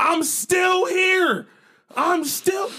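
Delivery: very high, full-throated, all-out yell. Speaker acts out a past moment, retelling yelling at the top of their lungs. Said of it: "I'm yelling at the top of my lungs".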